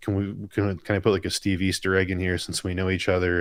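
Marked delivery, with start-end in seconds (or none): none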